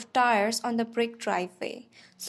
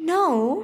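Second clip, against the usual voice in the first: gasped, much higher and louder; 6 semitones higher, 5 dB louder than usual. The narrator, just told they talk in their sleep, answers: gasped. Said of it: "I gasped".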